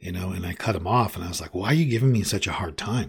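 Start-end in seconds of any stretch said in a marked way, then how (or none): 1.5-3.1 touchy, defensive outburst, cutting in. Retelling cutting off a man who was questioning: retelling own defensive words. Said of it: "I was very defensive about everything".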